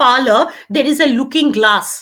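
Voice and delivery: ordinary talk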